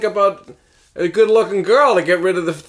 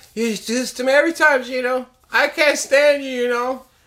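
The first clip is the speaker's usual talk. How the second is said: put-on high-pitched, childlike, squabbling little kid voice; 5 semitones higher than usual. In a skit playing a kid, talking to another kid: higher kid voice. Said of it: "All we did was make our voices a little higher".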